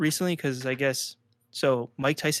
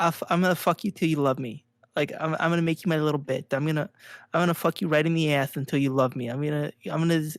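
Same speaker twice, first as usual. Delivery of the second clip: put-on boxer trash-talk delivery. Imitating Mike Tyson's insane trash talk: imitating Mike Tyson. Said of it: "He'd be like".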